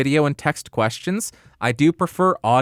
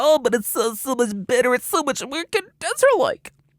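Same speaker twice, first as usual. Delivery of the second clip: put-on anime girl voice, very high-pitched; 9 semitones higher than usual. Voicing what people will say about a microphone, in an anime girl voice. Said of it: "Why did I sound like that? Turned into like an anime girl".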